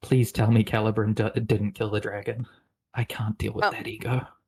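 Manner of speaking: whispered in a character voice. Voicing a character holding another's hand: whispering in character. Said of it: "what was the whisper?".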